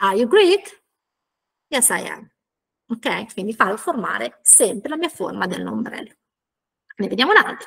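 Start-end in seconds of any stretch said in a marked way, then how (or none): 0.0-0.8 pitch rises at the end on Greek. English lesson for italian speakers, a yes-no question: rising question intonation. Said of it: "E l'intonazione fa così, sale".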